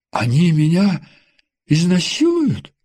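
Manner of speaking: frightened, fearful voice with swooping pitch. Ella asks her visitor a question, frightened. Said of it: "испуганно спросила Элла".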